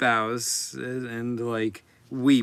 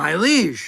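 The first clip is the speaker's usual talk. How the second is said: loud, high, awestruck goblin gasp; 7 semitones higher, 7 dB louder than usual. Voicing a goblin who sees the new Squirrel King arrive: goblin gasping in awe.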